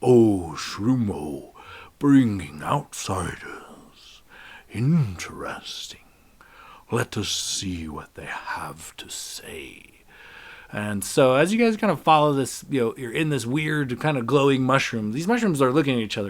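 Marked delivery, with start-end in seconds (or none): 0.0-9.9 huge booming voice, very slow, drawn way out. A narrator voices Papa Shroom addressing the visitors, in a loud booming voice. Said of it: "this loud booming voice".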